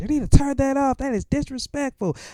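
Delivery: very high, shrill, screaming yell. Retelling how a neighbor across the street yelled at the kids: imitating a woman screaming. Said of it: "was screaming at us".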